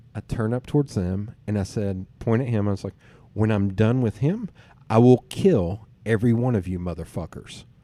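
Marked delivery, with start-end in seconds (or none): none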